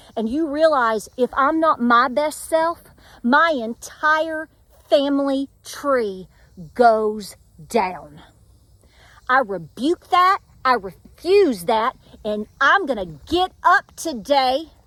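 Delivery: slow, indignant, fired-up righteous anger. Speaker rebuking evil spirits before listeners, with righteous anger. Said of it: "let me say it right now with righteous anger".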